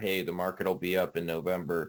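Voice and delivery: ordinary talk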